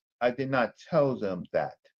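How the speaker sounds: very low-pitched, dropped, soft voice. Repeating a denial when asked to say it again: low pitch. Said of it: "I'm gonna say it low pitch".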